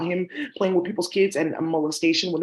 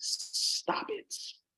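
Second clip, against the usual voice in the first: hushed, breathy, barely audible put-on whispered character voice; 10 dB quieter than usual. Break in on the talk before moving on, in your Waka voice. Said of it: "Stop in my Waka voice".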